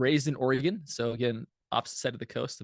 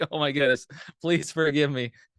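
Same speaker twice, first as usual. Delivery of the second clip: mortified, apologetic pleading tone, louder; 2 semitones higher, 5 dB louder than usual. Retelling own reply after missing a scheduled call: imitating own mortified apology. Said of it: "I was, like, mortified".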